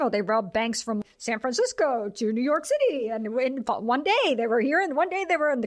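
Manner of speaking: mocking, sensationalized, overdramatic delivery.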